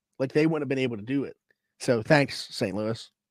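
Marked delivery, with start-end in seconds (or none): 1.8-3.1 slow, sarcastic, put-on grateful tone. Thanking saint louis for a trade now regretted: sarcastic. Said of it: "Now I'm saying it sarcastically".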